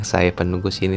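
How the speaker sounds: plain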